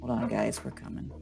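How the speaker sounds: muttered quietly under the breath. Voicing a character looking out a car window: said under her breath. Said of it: "kind of says under her breath".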